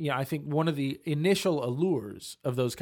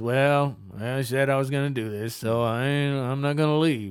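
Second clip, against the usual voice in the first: put-on mopey voice; 4 dB louder than usual. Acting out someone who only endures a partner, in a mock-mopey Eeyore voice.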